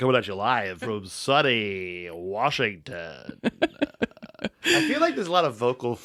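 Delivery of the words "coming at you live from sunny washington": very slow, drawn-out radio DJ announcer voice. Reminded they haven't done it in a while, speaker slips into a radio announcer voice. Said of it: "you haven't done the radio voice".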